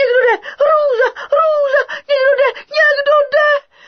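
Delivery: very high, loud, terrified marmot-like squeal. A narrator reads a marmot's cry as heavy steps approach, squeaky frightened voice. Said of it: "pískal a pískal".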